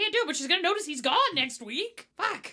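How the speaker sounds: play-acted, very high, frantic, freaked-out panicked rambling. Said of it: "just like freaking out".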